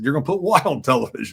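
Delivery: ordinary delivery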